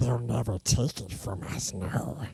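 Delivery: very low, deep, creepy hissing creature voice. Keeping up the bit about him in his office, the speaker uses a Gollum voice. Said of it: "my Gollum voice".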